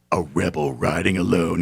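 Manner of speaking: deep, slow, drawn-out commercial announcer voice. Describing a motorcycle commercial, imitating its deep-voiced narrator. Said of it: "they got the deep voice guy going".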